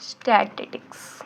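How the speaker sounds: very slow, soft, drawn-out word.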